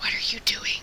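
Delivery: soft, hushed whisper. Approaching her slowly in character and asking what she is doing: whispering.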